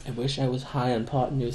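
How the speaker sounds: very soft, hushed, almost under the breath. Retelling a comedy sketch line: imitating a Key and Peele sketch character. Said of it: "that Key and Peele sketch where he's like".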